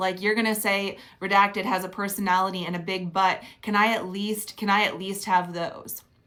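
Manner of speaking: normal talking voice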